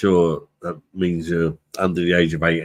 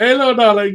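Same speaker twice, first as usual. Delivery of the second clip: slight put-on Indian accent, very high; 5 dB louder than usual. Retelling how a man greeted the speaker walking in, slight put-on Indian accent. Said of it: "but like in a slightly Indian accent".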